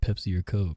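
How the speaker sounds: confiding, fully voiced stage whisper. Playing a character who elbows a companion and asks: half-whispering. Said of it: "kinda whisper and be like".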